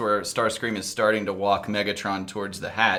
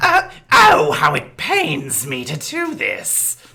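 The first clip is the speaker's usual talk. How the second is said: very loud, shrill screech with wild pitch swings; 7 semitones higher, 9 dB louder than usual. Opening a scene recap with a Starscream impression. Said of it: "my wonderful Starscream impression".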